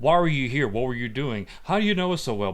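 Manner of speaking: mock heavy, pressing grilling, one after another. Retelling a movie scene where Frank grills Melina: imitating Frank interrogating heavily. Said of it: "Frank was interrogating heavily on Melina".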